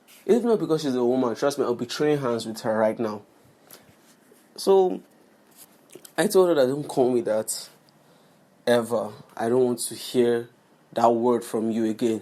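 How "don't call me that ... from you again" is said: normal talking voice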